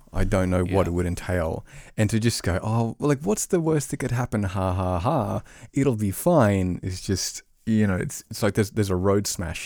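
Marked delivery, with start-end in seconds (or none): 3.3-6.8 mock carefree, playful tone. Describing facing something never done before, voicing that attitude in a put-on playful tone. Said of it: "in the playful tone of the voice".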